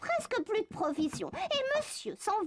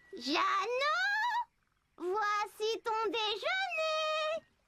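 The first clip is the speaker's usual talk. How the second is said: put-on little grandmother voice, higher; 4 semitones higher than usual. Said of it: "une petite voix en or comme la grand-mère".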